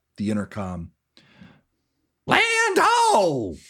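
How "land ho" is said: shrill, very high, loud scream, "ho" drawn out. Voicing a ship captain calling over the intercom: Captain Smokey screaming. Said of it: "Captain Smokey scream out over the".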